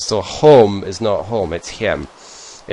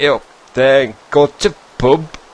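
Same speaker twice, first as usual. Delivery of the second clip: slow put-on Yorkshire accent, words spaced out; 6 semitones higher than usual. Describing how people in yorkshire speak, in an imitated yorkshire accent. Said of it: "Until they get down to Yorkshire, where then they speak like".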